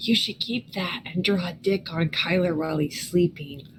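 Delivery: whispering in an acted voice. Leaning over to a party member in character: whisper. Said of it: "I'm gonna lean over and whisper".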